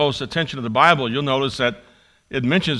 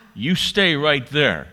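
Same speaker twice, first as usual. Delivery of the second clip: put-on steady, firm and resolute tone. Reading a story where a pastor's wife tells the narrator to wait, firm voice. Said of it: "said with a firm voice".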